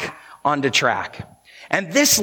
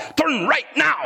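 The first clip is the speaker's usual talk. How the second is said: put-on very high-pitched voice with German accent; 10 semitones higher than usual. Describing voice options in a navigation system, imitating the german guy voice. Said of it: "the German guy".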